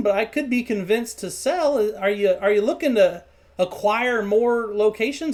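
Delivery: plain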